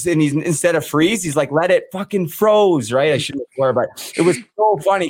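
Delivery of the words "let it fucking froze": acted exasperated, heated yelling outburst. Retelling how an angry player yelled at the team: imitating LaBelle yelling. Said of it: "yelling at us and he's like".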